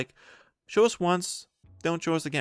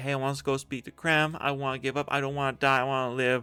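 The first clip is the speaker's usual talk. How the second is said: put-on pleading, begging tone. Retelling a movie scene where a prisoner calls out: imitating begging. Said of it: "she starts calling out and begging".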